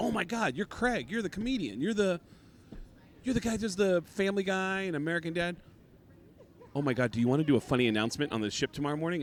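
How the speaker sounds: put-on bubbly, peppy, upbeat, gushing enthusiasm. Retelling how the cruise director greeted him: imitating a peppy, upbeat voice. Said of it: "She's really peppy".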